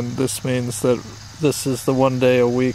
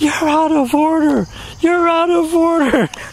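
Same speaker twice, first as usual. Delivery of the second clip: mock scream, high-pitched and loud. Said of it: "that's why you were screaming at the candy".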